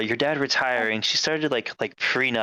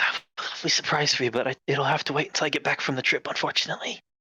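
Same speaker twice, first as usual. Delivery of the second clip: quick, hushed half-whisper close to the ear; 4 semitones higher than usual. Retelling what he half-whispers in your ear while cutting cake, retelling a half-whisper. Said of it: "he whispers in your ear real quick".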